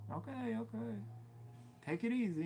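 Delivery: passive-aggressive, pointed tone, high and slow. Retelling what a customer would say: imitating a passive-aggressive customer. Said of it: "he's very, like, passive-aggressive".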